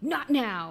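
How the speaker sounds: acted, heavy-handed, way too aggressive outburst. Retelling a game's dialogue choice: imitating an overly aggressive line. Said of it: "way too aggressive".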